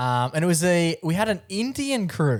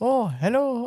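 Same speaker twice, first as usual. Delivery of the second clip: put-on small, polite French-accented voice; 7 semitones higher than usual. Retelling a guy who walked in next door greeting him, small French voice. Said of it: "heard him in his French little voice".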